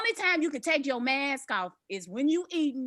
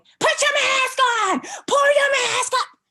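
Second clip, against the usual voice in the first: shrill yelling, very high and very loud; 12 semitones higher, 10 dB louder than usual. Retelling a woman telling a passerby to mask up: imitating a woman yelling. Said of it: "She yelling at him".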